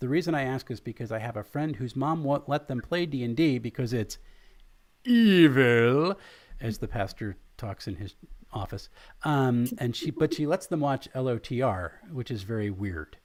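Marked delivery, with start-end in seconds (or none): none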